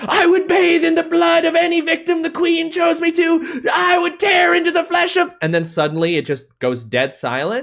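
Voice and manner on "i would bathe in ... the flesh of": shrill, very high, zealous shouted cry. Voicing an ant declaring loyalty to its queen in battle: ant shouting. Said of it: "is shouting it out".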